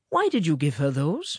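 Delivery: ordinary delivery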